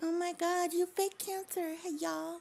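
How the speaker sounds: squeaky parody voice, pitched very high. Doing an impression of Dee Dee on stream: Dee Dee impression. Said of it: "I'm being Dee Dee".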